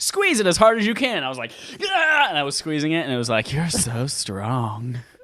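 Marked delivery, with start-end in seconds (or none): 3.5-5.0 low, deep, sultry, seductive robot voice. Retelling a strength test, the machine reacts to the speaker's squeeze: imitating a deep, sultry voice. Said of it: "Its voice got really deep and sultry like that".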